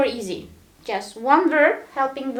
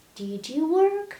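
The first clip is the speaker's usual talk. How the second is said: pitch climbs at the end on work; 2 semitones higher, 4 dB quieter than usual. Teaching that a question's intonation rises, asking did you work: rising intonation on work. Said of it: "when you ask a question, the intonation is rising".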